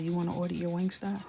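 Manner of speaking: ordinary talk, nothing marked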